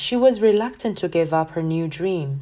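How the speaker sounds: ordinary delivery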